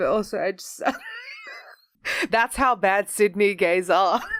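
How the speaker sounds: laughing, words broken up, swooping pitch. Apologising for laughing at someone's experiences, while laughing. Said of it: "I'm so sorry for laughing".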